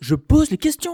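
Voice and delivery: booming, shrill, very loud, slow, drawn-out delivery. Doing an impression of Pascal Praud on request: Pascal Praud impression. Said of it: "petite imitation de Pascal Pro".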